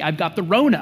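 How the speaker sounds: normal talking voice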